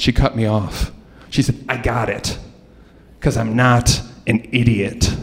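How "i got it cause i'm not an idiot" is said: slow, gravelly, raspy smoker's voice. Retelling the substitute teacher cutting in: imitating a raspy smoker's voice. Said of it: "in this voice that sounded like she just ate a pack of cigarettes".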